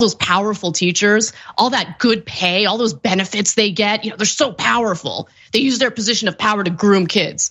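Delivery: mocking, put-on sarcastic tone. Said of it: "Anna's mocking and faux sarcastic tone".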